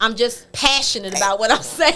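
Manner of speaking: plain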